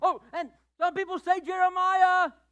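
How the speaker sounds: very high, shrill, very loud blaring shout. Acting out the disciple Bartholomew blurting out an answer: acting Bartholomew yelling. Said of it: "You don't gotta yell, shout".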